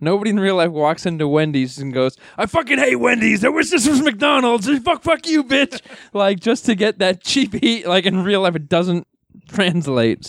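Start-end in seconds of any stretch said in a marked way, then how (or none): 2.4-5.8 very high, put-on angry rant, spat out. Acting out a heel walking into Wendy's for cheap heat, in a mock-angry Tarzan voice. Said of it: "why does that have a Tarzan voice for that".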